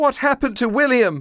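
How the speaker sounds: shrill, very high, rushed shouting. Facing the creature, the narrator demands to know what happened to the boy, shouting. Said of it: "I shouted".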